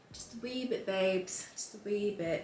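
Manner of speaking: fake British accent, laid on thick. Applying makeup on camera, unable to resist doing a British accent. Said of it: "doing a British accent".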